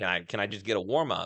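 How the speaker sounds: acted sassy manner. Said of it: "just kinda being all sassy back and forth".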